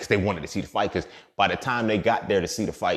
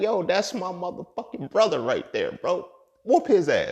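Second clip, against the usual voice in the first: mock amazed, very high-pitched excited cheer; 11 semitones higher than usual. Retelling watching a fight in a bathroom: retelling own amazement. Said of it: "I'm amazed at this point".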